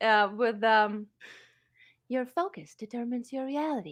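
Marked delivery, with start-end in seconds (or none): 2.1-3.9 animated, swooping, sing-song character voice. Saying a quote from another character in Ahsoka's voice. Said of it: "but with Ahsoka's voice".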